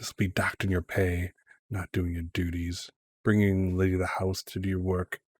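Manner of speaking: hushed, quiet half-whisper. Retelling a woman half-whispering to Current as she goes by, half-whispering. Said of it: "she kind of whispers to Current".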